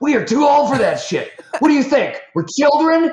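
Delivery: put-on very high, loud, furious shrieking. Retelling a man's girlfriend getting out of the truck, imitating an angry scream. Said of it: "screams it. She's so mad".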